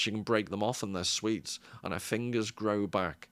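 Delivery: ordinary delivery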